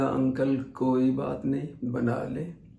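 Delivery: put-on flat, slow-paced boyish voice.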